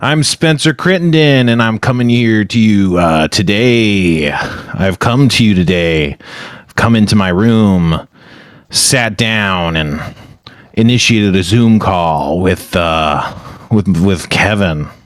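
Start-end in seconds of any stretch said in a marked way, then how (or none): 6.6-14.9 low, bored, unexcited delivery. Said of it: "You sound so excited about that".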